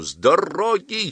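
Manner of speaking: ferocious, fierce, high-pitched yelled shout. An officer jumps from a stopped vehicle, waving a pistol, rushing at John; fierce shout. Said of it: "свирепо кричал он".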